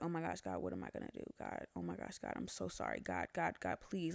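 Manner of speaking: acted-out, desperate, begging plea. Retelling praying alone in a bathroom, retelling a desperate plea. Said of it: "pleading with the Lord for my life".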